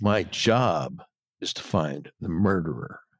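very low, hushed, intense, almost menacing voice. Reading a character's line aloud to another character, in a low, intense, menacing voice. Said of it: "in a low, intense, and almost menacingly voice".

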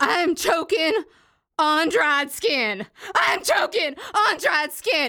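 reenacted high-pitched shouting. Recounting a mishap while eating yesterday, the speaker reenacts themself: retelling a yell. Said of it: "I started yelling".

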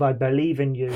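ordinary delivery

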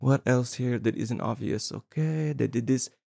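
quiet, nice, calm, soft murmuring commentary voice. Recalling a commentary track, the speaker is imitating Gaspar's quiet calm voice. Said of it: "He's so quiet and so nice. He's so calm".

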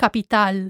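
stress on the last a of capital. Showing a learner how to pronounce capital: stress on the last A of capital. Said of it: "the stress is on the last A".

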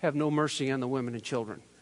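put-on deadpan, flat and expressionless. Retelling someone's reply when asked about his game strategy, a mock-deadpan reply. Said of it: "with a deadpan face says".

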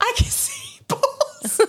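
acted-out, shrill, high yell, slow and stretched. Retelling what the head of VCE yelled, retelling a yell. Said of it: "she fully just yelled".

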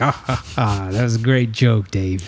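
mock booming laugh. Speaker retelling how a man reacted to him, retelling a booming laugh. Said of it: "He started laughing, a booming".

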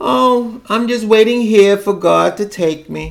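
play-acted sorrowful, downcast, high voice. Retelling what an elderly aunt says on the phone: imitating someone speaking sadly. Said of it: "say in the phone, sadly".

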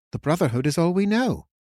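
puzzled, baffled tone. Answering the king, confused.

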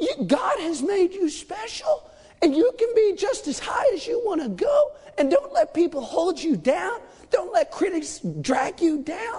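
encouraging televangelist voice. Speaker mimics the leaders of enormous churches, doing a megachurch preacher impression. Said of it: "I'm going to do my best impression".

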